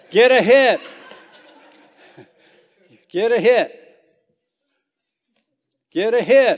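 very loud, high, drawn-out cheering shout. Pitching as the son, he retells his mom in the stands, imitating mom yelling. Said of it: "my mom is yelling out".

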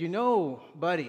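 put-on Middle Eastern-accented speech. Retelling what the man taking his order said, in a thick Middle Eastern accent. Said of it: "he was a Middle Eastern guy, he had a thick accent".

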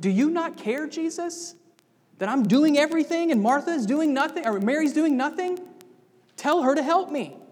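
frustrated, accusing tone. Retelling Martha's complaint to Jesus, acting out Martha's frustrated accusation. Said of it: "You can hear the frustration in her voice. It's almost accusatory".

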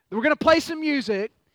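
mild herald-style announcer voice, calling out. Retelling a story, the speaker acts out a spokesman, retelling a spokesman yelling. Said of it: "he yells out".

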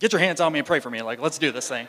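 loud, fast, fired-up pleading tone. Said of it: "she was all fired up".

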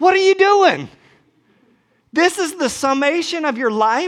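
mock, very high-pitched, shrill shouted yell. Retelling what they once yelled at him, re-enacting the yell. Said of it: "And I yelled at him".

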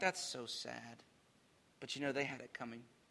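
put-on smug under-breath remark. Describing aloof people who don't help their neighbors, mimicking smug muttering. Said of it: "smugly look on, saying beneath their breath".

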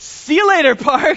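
put-on gleeful, delighted, cheerful child's voice. Retelling the other son's cheerful goodbye to the city: imitating a gleeful child. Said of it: "And was just so happy".

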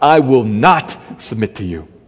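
low, defiant words spat through clenched teeth. Showing how defiance can sound, the speaker spits it out through clenched teeth. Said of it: "through clenched teeth you spit out".

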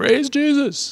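shrill, very high, mocking sarcastic yell. Retelling how a friend on a beach yelled: imitating a sarcastic yell. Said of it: "sarcastically yells out".

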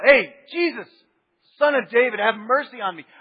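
very loud shout at full voice. Retelling how the blind man Bartimaeus first called out: imitating Bartimaeus shouting out. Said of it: "he just kind of shouted out".

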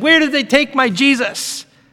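frantic, alarmed, high-pitched, panicked voice. Retelling the women coming to the tomb: imitating panicked speech. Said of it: "They were panicking".

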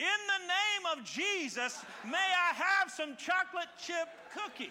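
put-on little boy's all-out, loud, high-pitched shout. Telling a story about a boy standing in a shopping cart, retelling a loud shout. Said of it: "shouted in his loudest voice".

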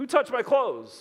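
mock, slightly angry voice. Discussing a Bible passage, voicing Jesus in a mock-angry Jesus voice. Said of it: "Jesus has a little hint of anger in his words, like".

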